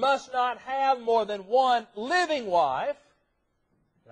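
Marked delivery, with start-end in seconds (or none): 0.0-3.0 living stressed in a slow, loud line. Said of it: "I stress that word living".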